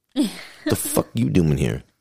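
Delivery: angry, put-on cat voice. Voicing a cat scolding its owner for coming home: Eddie Murphy voice. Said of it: "Eddie Murphy, and the cat kinda looks at you like".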